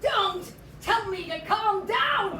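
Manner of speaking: loud, high, slow angry outburst.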